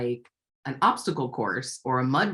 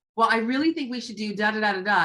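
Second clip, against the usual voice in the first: slightly more strident, argumentative, pitched-up voice; 6 semitones higher than usual. Retelling arguing with a resistant partner: imitating a strident tone. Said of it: "you're a little more strident".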